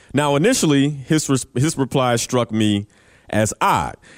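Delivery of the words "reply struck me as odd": normal talking voice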